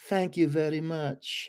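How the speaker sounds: put-on soft, light Southern accent. Retelling Marla's reply to a compliment on her earrings, in Marla's little Southern accent. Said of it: "with that little Southern accent".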